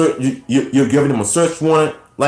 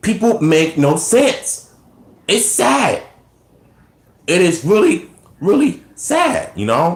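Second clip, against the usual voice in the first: pitched-up voice, breaking and cracking; 5 semitones higher than usual. Talking to a listener about something they watched, voice cracking. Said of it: "sorry, my voice is cracking though".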